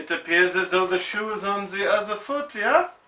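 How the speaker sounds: fake put-on German accent. Complaining about a game, the speaker slips into a German accent. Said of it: "What's with the German accent".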